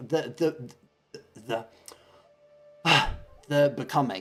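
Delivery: stumbling over words. Explaining something and struggling to find the word, stammering. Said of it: "I'm stammering".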